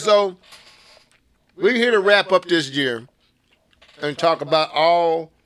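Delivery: talking with mouth full of food. Introducing the end-of-year talk to the others, talking with food in mouth. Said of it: "I got food in my mouth".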